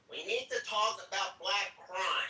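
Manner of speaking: put-on voice, very high-pitched. Speaker imitates a man they are describing; high-pitched imitation of a man. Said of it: "he has like a high pitched voice".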